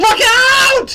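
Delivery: screaming at the top of lungs, loud, panicked.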